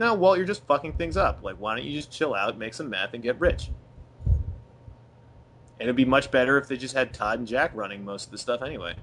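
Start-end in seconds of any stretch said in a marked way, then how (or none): none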